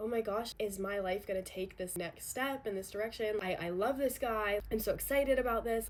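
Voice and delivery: ordinary talk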